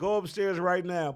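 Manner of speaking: mock yelling. Retelling how his wife ordered him upstairs, retelling a yell. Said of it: "and she's yelling".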